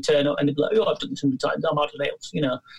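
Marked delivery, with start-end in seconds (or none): 0.8-2.3 smug, cocky, arrogant show-off boasting. Retelling what the cocky, arrogant trainees would say: imitating a cocky, arrogant trainee. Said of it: "the really cocky, arrogant ones".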